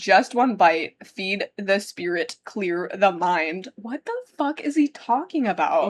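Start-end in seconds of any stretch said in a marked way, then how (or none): none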